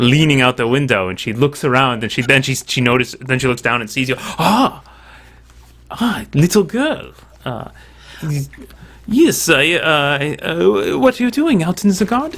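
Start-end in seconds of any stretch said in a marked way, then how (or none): 4.2-12.4 put-on slow, high, drawn-out Spanish accent. Narrator voices the lady leaning out the window who spots the listener: Lady Maria, Spanish accent. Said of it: "supposed to be a Spanish accent".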